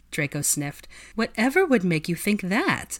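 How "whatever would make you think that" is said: sugary, sweet tone. Granger answers Draco after he remarks on her costume: sweetly. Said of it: "she asked sweetly".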